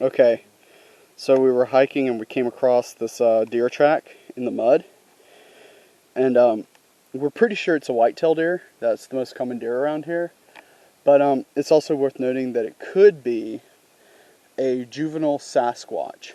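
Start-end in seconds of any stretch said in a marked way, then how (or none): 11.6-16.3 dry, sarcastic delivery. Describing a deer track found while hiking: sarcastic. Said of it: "if you can't hear the sarcasm in that".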